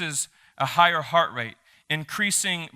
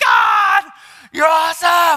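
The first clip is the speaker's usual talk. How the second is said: very high, very loud, fierce, shrill angry yell; 12 semitones higher, 11 dB louder than usual. Showing how he praises god, an angry-sounding shout. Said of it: "angry shouting ... it looks like I'm mad".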